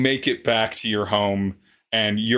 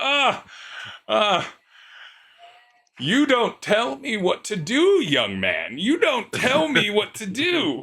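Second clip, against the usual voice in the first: laughing through the words, very high swooping voice; 11 semitones higher than usual. Voicing an aunt in her seventies who fell while bowling: laughing while talking as the aunt. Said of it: "she's laughing and she's like".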